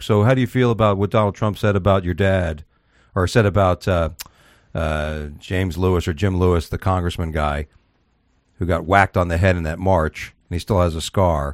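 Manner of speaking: plain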